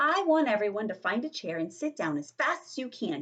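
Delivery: ordinary delivery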